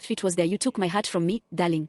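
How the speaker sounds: ordinary delivery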